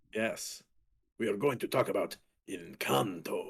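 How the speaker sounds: very low, grand, dramatic swashbuckler voice. Host introduces the Encanto topic, Zorro voice. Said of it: "channeling a little Zorro voice in there".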